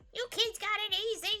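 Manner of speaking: bad, terrible, very high old-lady voice. Speaker quotes an older person's remark: terrible grandma voice. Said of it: "It's a terrible grandma voice".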